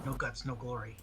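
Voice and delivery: grumbling fantasy dwarf voice. A player voicing a dwarf before a secret door, in a grumbly dwarven voice. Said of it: "In a grumbly dwarven voice".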